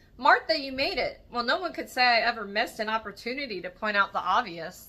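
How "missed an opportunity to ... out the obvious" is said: ordinary delivery, nothing marked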